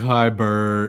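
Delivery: mocking, teasing put-on boy's voice. A parent imitates their son greeting his grandma on the phone, mocking imitation of son. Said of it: "I make fun of him like".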